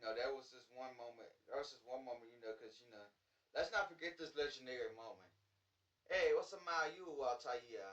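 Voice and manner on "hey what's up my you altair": loud, raised, high-pitched put-on Arabic accent. Retelling a funny game moment: Desmond Miles's put-on Arabic accent. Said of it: "in an Arabic accent".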